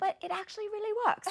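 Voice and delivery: shoddy fake English accent. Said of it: "I'm gonna do probably a really shitty accent".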